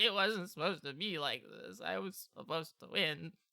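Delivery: tearful, whimpering, crying lament. Voicing a defeated mole rat crying in the rain: whimpering, crying. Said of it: "you hear them, like, whimpering".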